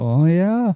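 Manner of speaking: put-on, long drawn-out "oh yeah". Imitating how the other speaker says the catchphrase: drawn-out "oh yeah". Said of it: "you drag it out, you're like".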